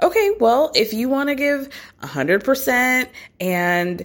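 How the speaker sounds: mock patronizing, high, condescending talking-down tone. Retelling Amanda's reply; mimicking a condescending tone. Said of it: "kind of condescendingly, I thought, says".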